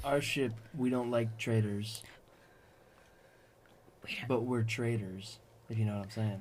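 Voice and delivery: low, soft, hushed half-whisper with no voice. A character speaks aloud to no one in particular, into the air, half-whispering. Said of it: "Who are you whispering this to?".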